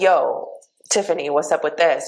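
ordinary delivery

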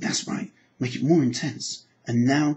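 normal talking voice

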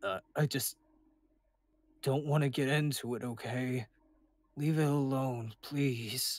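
serious but timid. Refusing to talk about something and asking to be left alone, serious but timid. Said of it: "His tone as he talks is a bit more serious, but still including pieces of his timid nature".

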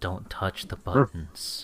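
threatening, ominous, menacing tone. Narrating a scene, voicing Roy warning the others about the cane, very menacingly. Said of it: "very menacingly".

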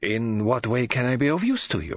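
plain reading voice

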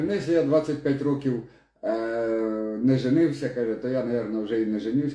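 ordinary talk

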